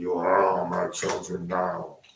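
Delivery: really deep, dropped-down voice. Speaking in makeup and a glove: deep Freddy voice. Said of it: "Your Freddy voice is, like, really deep".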